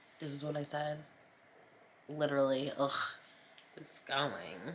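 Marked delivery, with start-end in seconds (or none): 2.8-4.8 soft, theatrical, dramatic groan. Repeating own reply when asked how the painting is going, a dramatic groan. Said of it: "I'm so dramatic".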